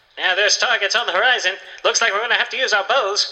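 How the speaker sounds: vintage 1920s radio announcer voice. Reading a joke thread reassigning fantasy accents, an elf speaks in 1920s radio announcer voice. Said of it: "They're 1920s radio announcer".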